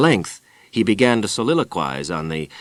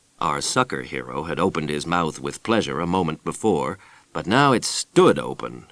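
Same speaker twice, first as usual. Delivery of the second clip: usual speaking voice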